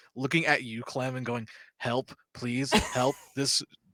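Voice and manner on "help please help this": desperate begging cry, slow. Narrator voicing a man begging to be let go, looking at Clem: desperate plea for help. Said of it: "the desperate like in his voice".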